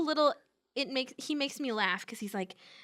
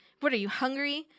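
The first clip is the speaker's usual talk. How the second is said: put-on snarky voice. Retelling how Nero greets a stranger at the garage: snarky Nero imitation. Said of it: "he's being snarky".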